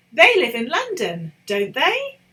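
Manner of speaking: question-like tune, voice rising up on they of don't they. Teacher showing students how a tag question sounds, rising question intonation. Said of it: "your voice should also indicate it's a question by going up".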